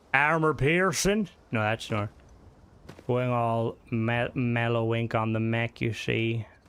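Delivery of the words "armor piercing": put-on American accent on "armor piercing". Asked how Americans say it, trying the phrase in an American accent. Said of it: "How did Americans say it?".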